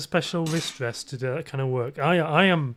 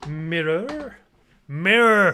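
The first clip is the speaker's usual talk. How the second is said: put-on American accent, louder and higher; 3 semitones higher, 6 dB louder than usual. Bringing the mirror back up, the speaker says the word in an American accent. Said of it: "That's how Americans say it".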